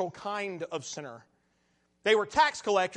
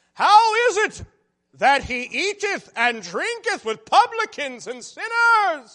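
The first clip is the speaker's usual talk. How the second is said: very high, very loud, self-righteous sneering voice; 9 semitones higher, 9 dB louder than usual. Reading how the Pharisees questioned the disciples, the speaker switches to a Pharisee voice. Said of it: "this is my Pharisee voice".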